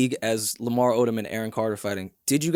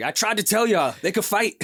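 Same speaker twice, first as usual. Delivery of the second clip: acted-out, high-pitched screaming; 8 semitones higher than usual. Imitating a fighter screaming at the TV while watching fights: imitating someone screaming at the TV. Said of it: "screaming at the T V".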